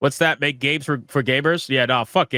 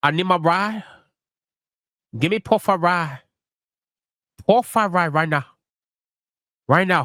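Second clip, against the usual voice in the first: bad, fake put-on Chinese accent; 4 semitones higher than usual. Speaker trying again after calling his last attempt shitty: bad put-on chinese accent. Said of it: "Is that is that is that better?".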